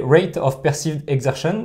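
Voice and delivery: slow, exaggerated, very strong English accent.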